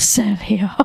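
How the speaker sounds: seductive, sensual, sultry voice. Describing the voice they tend to use: sensual, sultry 'Sergio'. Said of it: "I tend to like do it in like a like a sensual like".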